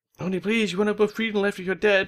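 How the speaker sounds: worried, high, pleading mum voice.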